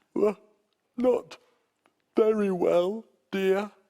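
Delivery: yawning while speaking. Reading a story aloud, one bear character answers the other, yawning while speaking. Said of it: "yawned Mister Bear".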